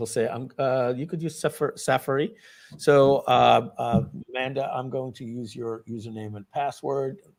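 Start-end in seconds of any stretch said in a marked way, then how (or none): 0.3-2.3 English spoken with a put-on French accent. Imitating how someone says Safari: Matt Serralta's French accent. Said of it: "That's his French accent".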